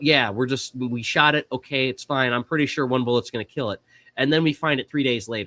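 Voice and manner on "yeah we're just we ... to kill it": ordinary talk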